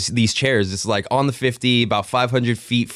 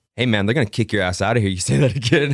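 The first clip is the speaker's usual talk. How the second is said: put-on dead-serious delivery. Retelling what a fan on the tour said to Menace: imitating a dead serious warning. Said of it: "Just dead, dead serious".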